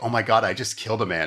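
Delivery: ordinary delivery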